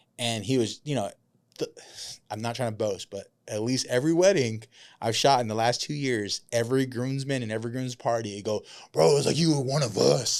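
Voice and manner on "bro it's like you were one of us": mock deep drunk voice, louder. Retelling what drunk groomsmen tell the wedding videographer: imitating a drunk groomsman, deep tone. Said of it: "I say that deep tone 'cause they're drunk".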